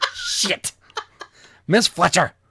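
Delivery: frustrated, angry, high-pitched blurted outburst. Stumbling over a character's name, the speaker finally blurts it out: angry outburst. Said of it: "just say it angrily".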